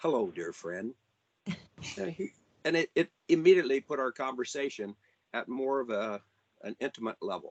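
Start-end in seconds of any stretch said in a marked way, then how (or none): 0.0-0.9 smooth, mellow, deep, low baritone voice. Recalling how Don answered his hello, the speaker quotes him: imitating Don's mellow baritone. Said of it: "in his mellow baritone voice".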